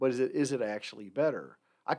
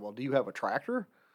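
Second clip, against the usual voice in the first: pointed, dry, sarcastic tone. Retelling a reply to a professor about a grade: retelling a sarcastic question. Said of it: "my sarcastic point".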